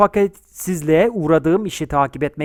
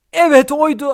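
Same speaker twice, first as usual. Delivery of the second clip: frightened, fearful cry, much higher; 8 semitones higher than usual. Learning who the sought man really is, a man cries out in fear. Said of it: "hakikaten oydu diye korkuyla bağırdı".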